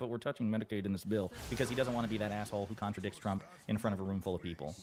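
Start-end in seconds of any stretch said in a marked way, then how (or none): 0.0-1.3 mock mumbling and muttering under the breath. Imitating a Republican who contradicts the president: imitating someone muttering under his breath. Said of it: "I can see him saying that under his breath".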